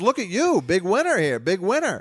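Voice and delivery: big, sassy waitress voice full of attitude. Retelling what a lady who served drinks asked: imitating a sassy woman. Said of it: "big sassy broad".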